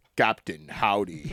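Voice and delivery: very deep, low, hushed, eerie murmur. Retelling the mystery voice heard after asking Jarek what was going on, in a very low voice. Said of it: "in a very low voice".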